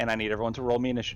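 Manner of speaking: ordinary talk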